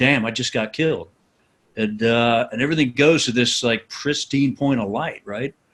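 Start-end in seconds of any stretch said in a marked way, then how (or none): 0.0-1.1 low, muttered under the breath to himself. Retelling getting hit by a round: imitating muttered swearing. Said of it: "swearing under my breath".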